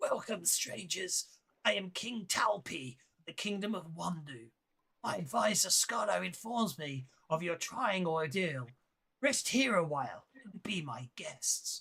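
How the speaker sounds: put-on raspy, rasping voice of an aged king. Narrator voicing the king welcoming the strangers, raspy King Talpi voice. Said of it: "the king addresses you with a raspy voice".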